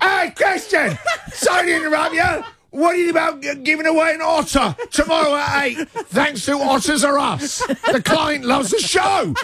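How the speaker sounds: loud booming voice. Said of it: "who bellows".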